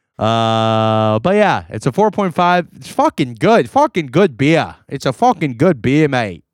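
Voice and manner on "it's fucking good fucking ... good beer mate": accent shifting Boston to English, much faster. Late-night chat about a beer, in an accent wavering between boston and english. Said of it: "you're fluctuating between Boston and England".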